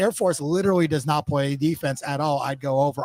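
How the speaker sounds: ordinary talk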